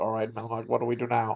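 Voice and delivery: low, very quiet, barely audible half-whisper. Speaker retells what he said to a companion in a half-whisper: half-whispered. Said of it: "I just whisper like".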